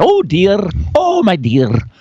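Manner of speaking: put-on Scottish accent throughout, on every word. Describing Mrs. Doubtfire to the others, doing her line in a Scottish accent. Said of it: "that was a Scottish accent".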